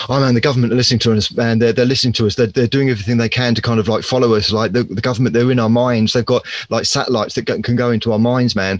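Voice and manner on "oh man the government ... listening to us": plain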